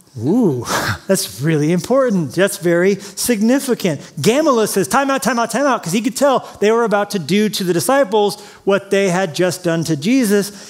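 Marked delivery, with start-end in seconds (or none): none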